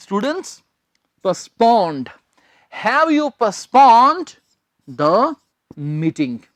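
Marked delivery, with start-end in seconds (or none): 2.9-6.4 slow delivery. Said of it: "third form क्या आ गई".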